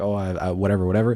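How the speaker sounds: ordinary delivery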